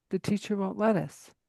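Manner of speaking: ordinary talk, nothing marked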